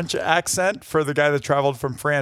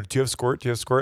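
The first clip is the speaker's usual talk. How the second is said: normal talking voice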